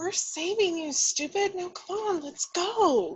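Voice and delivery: speaking in a whisper. Sneaking in to rescue someone in a cabin at night: whispering. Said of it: "Why are you whispering?".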